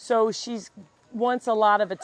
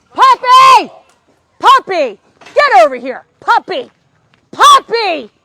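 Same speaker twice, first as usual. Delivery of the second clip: piercing, shrill scream, very loud and very high; 11 semitones higher, 17 dB louder than usual. Calling the puppy away from chasing a cat, screaming into the mic. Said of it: "I'm sorry for screaming in your ear".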